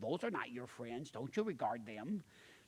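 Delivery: put-on very quiet, hushed Minnesota-East Texas accent. Retelling what a mom said about friends: imitating mom's Minnesota East Texas accent. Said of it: "In our little Minnesota, East Texas accent".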